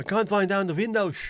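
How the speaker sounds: put-on Dutch accent, very high-pitched. Joking about pretending to be Dutch, in a put-on Dutch accent. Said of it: "I could just pretend to be Dutch".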